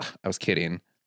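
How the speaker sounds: deadpan, flat, unconvincing joking tone. Retelling a show scene, imitating Stanford's unconvincing sarcastic line. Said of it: "that didn't sound like you were kidding".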